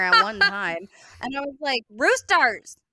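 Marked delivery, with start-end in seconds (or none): 1.9-2.7 loud, fed-up, exasperated yell. Retelling yelling at the roosters, retelling a scream. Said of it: "I'm screaming in there".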